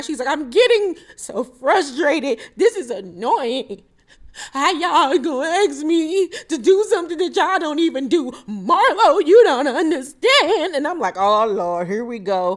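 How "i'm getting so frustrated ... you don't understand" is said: acted, high, tearful, upset crying with a wobble. Retelling Kandi's outburst when pushed, imitating Kandi crying. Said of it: "Kandi starts crying".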